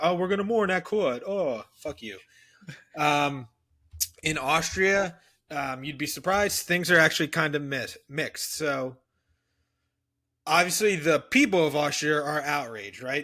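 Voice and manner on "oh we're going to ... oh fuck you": high-pitched, mocking, sneering English voice. Retelling how King George responded: King George as a mocking English guy. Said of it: "being little bitch English guy and being like".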